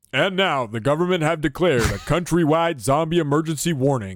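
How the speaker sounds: TV newsreader delivery. Asked to read a zombie story aloud, news reporter voice. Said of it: "Go news reporter voice".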